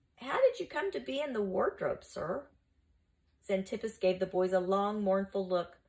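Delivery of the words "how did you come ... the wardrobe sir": deferential, respectful, careful, pitched-up tone. Narrator reads Musius asking Xantippus a question, addressing him as sir, respectfully. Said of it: "ventured a respectful question".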